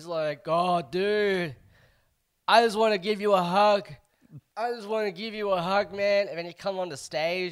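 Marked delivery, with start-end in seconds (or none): 0.5-6.3 mock sloppy, overfriendly drunk guy, loud and high. Retelling what a man in the audience said: imitating a drunk man. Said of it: "super drunk".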